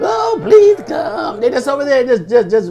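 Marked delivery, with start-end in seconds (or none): 0.0-1.4 mock, very high, whiny, pleading voice. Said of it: "just whining".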